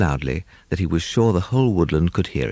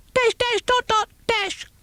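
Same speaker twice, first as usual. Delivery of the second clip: very high, squeaking bat voice. Reading a story aloud, voice the bat's signal in a squeaky voice. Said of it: "he squeaked".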